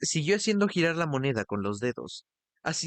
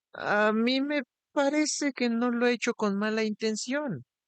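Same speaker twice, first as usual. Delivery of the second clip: high, unsure, hesitant, wavering and faltering voice; 8 semitones higher than usual. Kostrel tries once more to explain himself, in a high, hesitant voice. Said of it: "con voz aguda y vacilante".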